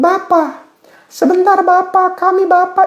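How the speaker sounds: very high, shrill, drawn-out praying voice. Acting out how Pastor Julius Malidunga prays in class, do a shrill Julius Malidunga impression. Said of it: "Jadi suaranya ngelengking".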